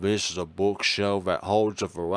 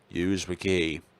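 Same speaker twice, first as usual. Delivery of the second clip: plain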